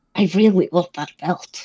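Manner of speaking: hushed, soft stage half-whisper. A player character speaks as an ice Goliath emerges, half-whispering. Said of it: "She whispers this".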